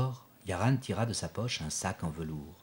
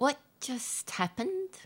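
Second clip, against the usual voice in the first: small, tiny voice. Narrator reading a character's question after strange events, in a small voice. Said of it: "Asked Emily in a small voice".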